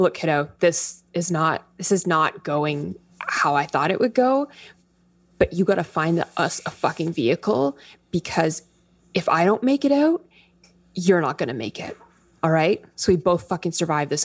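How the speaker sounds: muttered under the breath. Saying it to Alto while tying something around the head, under the breath. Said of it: "I'm saying kind of under my breath".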